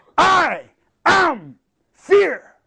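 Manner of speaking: loud giant shout, pitched very high. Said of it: "the giant shouts back".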